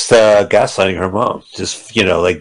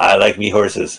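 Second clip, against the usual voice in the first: fake Scottish accent, much lower; 3 semitones lower than usual. Speaking to Cage while others listen, in a mock Scottish accent. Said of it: "What accent is that?".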